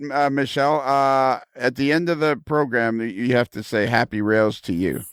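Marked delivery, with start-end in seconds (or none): none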